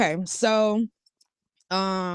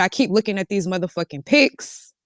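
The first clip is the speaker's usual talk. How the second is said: ordinary delivery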